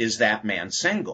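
ordinary talk, nothing marked

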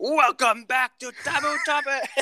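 very high-pitched, almost screaming delivery. Teasing Matt about how he comes through, Matt impression, nearly screaming. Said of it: "you're like screaming right now. ... You're coming through and you're like, ... That's what it sounds like".

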